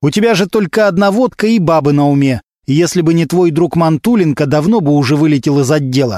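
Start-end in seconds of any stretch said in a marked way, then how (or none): none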